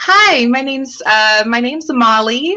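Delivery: unconvincing put-on girly voice, high and slow. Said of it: "I pull out like this little high pitched".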